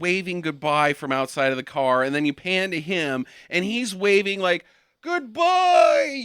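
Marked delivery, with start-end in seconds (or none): 5.0-6.2 put-on very high, shrill, pitched-up holler. Retelling a film scene of a dad waving goodbye: imitating someone yelling goodbye. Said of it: "yelling, like, as loud as he can".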